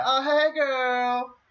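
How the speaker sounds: put-on, very high, friendly Southern accent. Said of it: "doing the Southern thing where it's like, you're still friendly".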